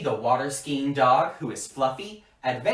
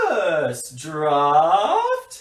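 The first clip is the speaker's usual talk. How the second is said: loud, grand, posh British accent, drawn out, swooping; 2 semitones higher, 5 dB louder than usual. Leading everyone at home through a writing exercise, in a Harry Potter British accent. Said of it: "very fancy".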